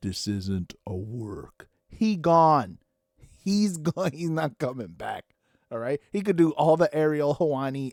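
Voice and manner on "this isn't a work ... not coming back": slow, deliberate, each word carefully spelled out. Telling listeners the wrestler is really gone, speaking slowly. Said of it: "I shall speak them slowly so you can understand".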